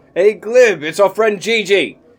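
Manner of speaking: high-pitched, loud calling out. Playing a character who yells in the door: yelling through a door. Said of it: "I'm just gonna yell in the door".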